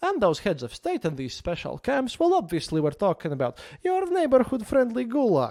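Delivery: mock cheerful, chipper, bright swooping joyful reading. Reading a text aloud, in a joyful manner. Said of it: "I'm sorry if I read this in a joyful manner".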